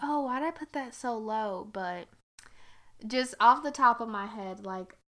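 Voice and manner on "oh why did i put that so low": plain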